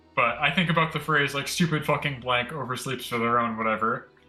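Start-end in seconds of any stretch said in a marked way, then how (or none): none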